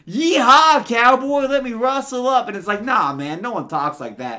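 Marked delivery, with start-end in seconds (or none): 0.1-2.4 clumsy, bad put-on American country accent. Mocking how British people fake American accents, in a bad fake country accent. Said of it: "if you're gonna talk like you're from the country".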